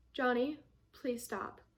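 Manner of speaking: calm, even tone of voice. Giving parenting advice, showing how to speak to a yelling child: calm voice. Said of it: "saying it in a calm voice".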